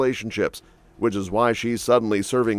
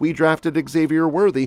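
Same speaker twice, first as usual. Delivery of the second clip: put-on shriek.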